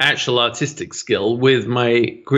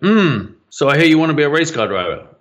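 put-on gruff, elderly man's voice; 3 semitones higher than usual. Retelling what the dean said: imitating a gruff old dean. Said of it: "an old gruff man".

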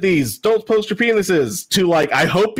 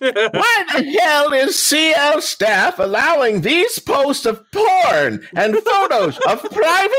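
put-on high, scandalized, pearl-clutching old lady voice; 9 semitones higher than usual. Reading out a post's complaint, pearl-clutching old lady voice. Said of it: "on my best uh, pearl clutching old lady".

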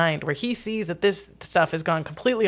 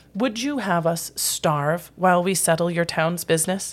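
put-on smug tone, faster pace. Retelling how a man answered someone confronting him, mock-smug. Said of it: "he very smugly said".

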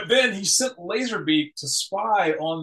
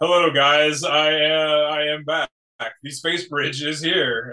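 imitated brainwashed voice; 3 dB louder than usual. Retelling a character's lines from the Animated Movie, imitating a brainwashed voice. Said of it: "he's also got the brainwashed voice".

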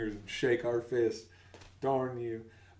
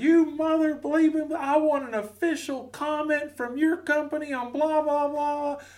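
put-on cussing yell, much higher pitch; 4 dB louder than usual. Retelling an old man cussing at him on the phone: retelling a cussing yell. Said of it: "And just starts yelling".

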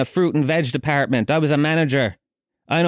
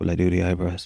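very low, hushed half-whisper; 8 semitones lower, 4 dB quieter than usual. Speaker quotes the barber half-whispering a question in their ear. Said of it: "he whispers in my ear".

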